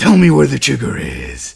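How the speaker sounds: booming, rough, loud growled voice. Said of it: "I can do the voice now".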